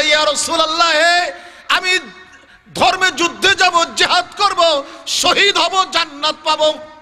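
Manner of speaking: high-pitched, eager, pleading voice.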